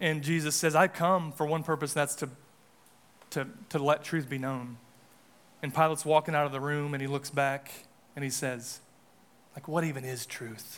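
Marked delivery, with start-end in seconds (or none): 9.7-10.8 play-acted, smug, self-satisfied low murmur. Retelling a man's parting reply as he walks out of the room, acting smug.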